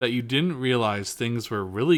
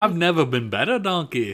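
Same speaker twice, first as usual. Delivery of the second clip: sarcastic, dry, bad ogre voice, high pitch; 5 semitones higher than usual. Recalling the movie scene, the speaker quotes the line in a failed Shrek impression. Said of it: "that was not Shrek".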